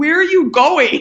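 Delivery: high-pitched shout. Retelling a race when he yelled over the radio: imitating someone yelling. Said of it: "he's just, like, yelling at me".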